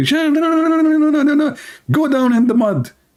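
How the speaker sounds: put-on drill sergeant scream, very high-pitched. Speaker recalls joining the army, retelling a drill sergeant's scream. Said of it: "he screamed at me".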